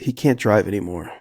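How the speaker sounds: ordinary talk, nothing marked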